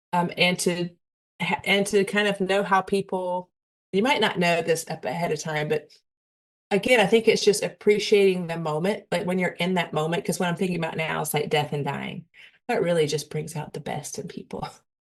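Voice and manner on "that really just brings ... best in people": dry, ironic, mocking sarcastic tone. Speaker reflecting aloud to listeners, then admitting the sarcasm: sarcastic. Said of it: "I'm being very sarcastic if you cannot tell".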